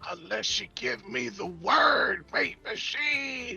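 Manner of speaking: very badly done whisper. Speaking in character to a locked-up ally: very bad whisper. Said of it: "very badly whispering".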